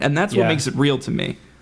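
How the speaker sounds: ordinary talk, nothing marked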